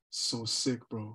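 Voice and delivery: barely audible, soft, throaty, guttural monotone drone. Describing Hercules, the speaker imitates his praise in a soft guttural monotone. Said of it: "Is it because I did the voice?".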